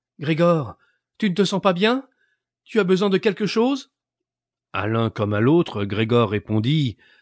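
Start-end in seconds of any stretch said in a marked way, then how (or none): 0.2-3.9 very high, plaintive, pleading tone. Behind the side door, Grégor's sister speaks to him: murmured plaintively. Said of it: "murmurait d'un ton plaintif".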